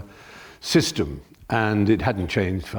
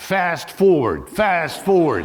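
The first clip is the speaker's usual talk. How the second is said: high, swooping mock crowd calling out together; 9 semitones higher, 4 dB louder than usual. Retelling how a cinema audience reacted when kissing started: imitating an audience shouting. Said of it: "half the audience just shouted out".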